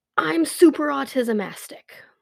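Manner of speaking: high, loud shout at the top of the lungs. Retelling how a child shouted by echoing escalators: retelling a child's loud shout. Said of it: "shouted at the top of his lungs".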